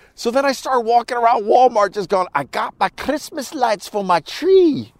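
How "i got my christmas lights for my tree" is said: over-the-top bad Scottish accent, sing-song and slow. Walking around Walmart wearing a mask: bad Scottish accent. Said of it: "imitating a terrible Scottish accent".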